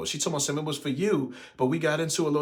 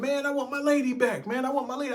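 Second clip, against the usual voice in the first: mock, heated, very high, snapping outburst; 10 semitones higher than usual. Retelling demanding his lady back at the door: retelling own snapping outburst. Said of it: "I was snapping".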